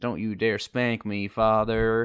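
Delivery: put-on loud, sassy, cheeky kid with Southern accent. Playing a child addressing his father, in a sassy Southern kid voice. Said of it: "this sassy Southern kid".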